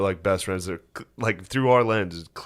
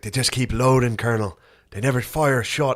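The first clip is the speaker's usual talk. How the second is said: put-on Irish accent on every word; 3 semitones higher than usual. Quoting an irish character they are discussing; irish accent. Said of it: "this Irish guy".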